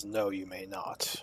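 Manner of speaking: very serious, solemn, grave and hushed tone. Voicing a character who answers a request: very serious tone. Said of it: "with a very serious tone".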